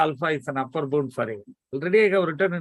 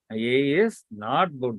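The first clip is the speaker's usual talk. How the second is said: slow, careful, deliberate, word by word. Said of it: "That's how I should say the negation".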